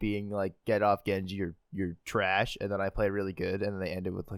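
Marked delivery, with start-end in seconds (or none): none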